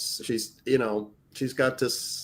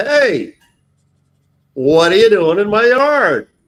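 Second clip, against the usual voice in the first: very loud, shrill, high-pitched yell; 10 semitones higher, 14 dB louder than usual. Retelling calling out to neighbors in the side yard: retelling a yell. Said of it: "and I yell out".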